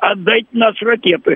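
high-pitched, shouty, yelling cartoon cat voice. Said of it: "кричать голосом кота Матроскина".

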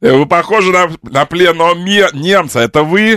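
loud, high call, projected to carry far.

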